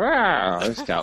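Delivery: casual, offhand delivery at very high pitch. Imitating a quarterback's thinking during a play: Matthew Stafford impression. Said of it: "the best Matthew Stafford impression I've ever heard".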